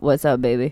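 deep, sleepy rasp, low in the throat. Imitating someone who just woke up, in a deep raspy voice. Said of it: "they have like that deep raspy voice and they're just like".

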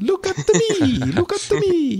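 put-on voice, very high, swooping. Talking about game design, breaking into Mario voice. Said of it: "I'm doing the Mario voice".

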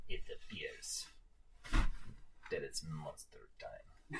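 very quiet, hushed whisper. Voicing a character's catchphrase in a game, whispering. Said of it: "Stop whispering!".

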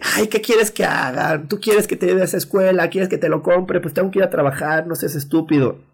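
mock, agitated, high-pitched, worked-up voice. Acting out how the mother never spoke: imitating a worked-up mother. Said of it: "nunca me lo dijo exaltada".

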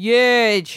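loud, long, stretched-out single word. Answering with another Donald Trump impression. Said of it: "this is mine".

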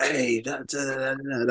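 put-on old-school dad yelling, very slow, drawn-out. Retelling how the old-school dad reacted before games: imitating father shouting and screaming. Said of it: "be shouting and screaming".

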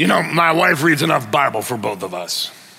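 low, put-on manly voice. Imitating an excuse husbands give about Bible reading: put-on man voice. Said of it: "got the man voice".

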